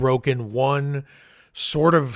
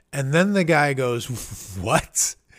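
usual speaking voice

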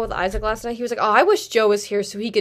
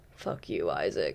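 aggressive, aggro put-on voice; 12 dB quieter than usual. Doing an impression of Joe after being asked to. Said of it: "do your Joe impression".

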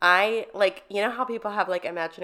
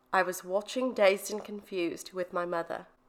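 put-on English accent in a storyteller manner; 4 dB quieter than usual. Telling a story from Tara's point of view, British accent as Tara. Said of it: "Who's clearly from England".

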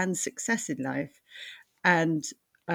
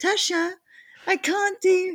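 very high, put-on six-year-old child voice; 4 dB louder than usual. A parent acts out asking their daughter for tech help, put-on six-year-old voice. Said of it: "putting on the 6-year-old voice".

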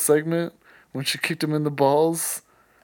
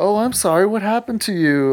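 acted, sweet-sounding sarcastic sympathy with sugary fake concern; 4 semitones higher than usual. Speaker voices a reply someone could give instead, putting on sarcasm.

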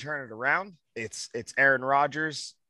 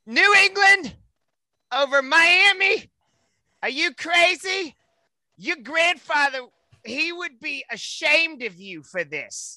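very high, shrill, loud put-on character voice; 13 semitones higher, 5 dB louder than usual. Talking about picking against the spread, doing a put-on character voice. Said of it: "I'm going to do a voice here".

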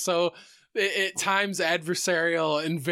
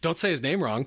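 ordinary talk

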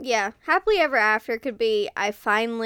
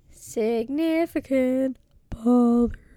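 slow, failed attempt at a deep voice. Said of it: "I was trying to do a deep voice, but it didn't work".

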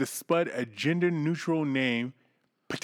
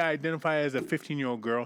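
ordinary talk, nothing marked

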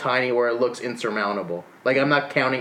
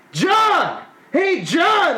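put-on very high, swooping drunken holler; 5 dB louder than usual. Retelling how the uncle yelled at a passerby from the car, retelling uncle's drunken yell. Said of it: "he just yells".

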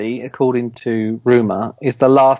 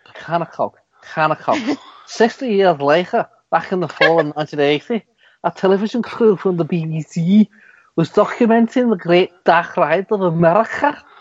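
bad, failed put-on Scouse accent; 6 semitones higher than usual. Reading a story aloud to someone who is drawing, in a bad Scouse accent. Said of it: "I could even do it in a Scouse accent".

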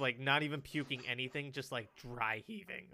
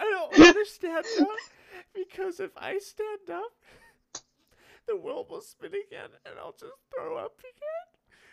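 mock hard crying, loud wailing sob, very high; 12 dB louder than usual. Retelling refusing to stand up while sick, imitating themself crying. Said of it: "this point I'm like actually crying into the toilet".

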